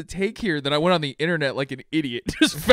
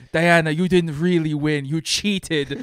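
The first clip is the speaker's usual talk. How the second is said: weird put-on Greek accent, slower pace. Retelling a movie scene, quoting Diana's aunt: Robin Wright's weird Greek accent. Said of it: "in this weird Greek accent".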